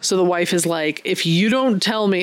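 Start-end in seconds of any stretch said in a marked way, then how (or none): none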